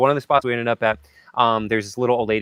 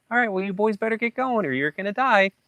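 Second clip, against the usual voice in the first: very high, kindly, nice grandmotherly voice; 11 semitones higher than usual. Retelling a woman's warning to leave town, imitating a nice grandmotherly woman. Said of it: "she was so nice and like grandmotherly".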